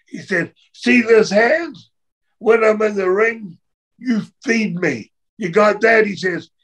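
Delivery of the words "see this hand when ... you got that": put-on slow, angry screaming. Retelling a man in the dressing room yelling at the boys, retelling angry screaming. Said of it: "Screaming at the boys".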